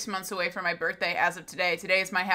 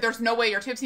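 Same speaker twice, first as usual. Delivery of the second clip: plain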